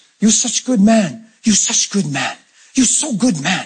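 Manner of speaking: non-native broken English. Retelling a little spanish man praising him on his last day, broken english. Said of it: "broken English".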